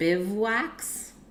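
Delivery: very slow, carefully drawn-out bivouacs. Struggling to pronounce a hard word, saying bivouacs very slowly. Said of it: "Look how slow I have to say it".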